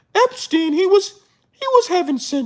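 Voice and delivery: squeaky, goofy puppet voice, very high. Mocking what kids' shows will say, doing a Sesame Street voice. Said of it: "that's my Sesame Street voice".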